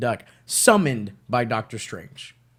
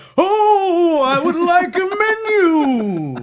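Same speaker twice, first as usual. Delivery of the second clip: high, loud, slow sing-song with stretched, swooping 'oh'; 9 dB louder than usual. Acting out ordering at a restaurant like the guy from Venture Brothers: voice of the guy from Venture Brothers. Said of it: "you gotta do it like the guy from Venture Brothers".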